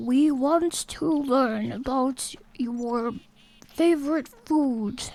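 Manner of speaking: slow, peaceful, wise, sage-like alien voice. Acting out a wise, peaceful alien: slow deep wise alien voice. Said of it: "they talk really slow and have, like, kind of deep voices".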